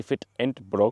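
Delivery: fake German accent. Quoting a lesson learned from german people, in a bad german accent. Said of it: "That was my best German impression".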